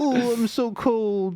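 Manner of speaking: put-on very high, slow, drawn-out old-grandma voice. Voicing the cat as a hooded grandma: put-on old grandma voice.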